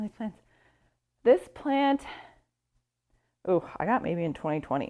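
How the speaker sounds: winded, breathless voice. Speaker moving houseplants while showing them off, out of breath. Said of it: "I'm out of breath".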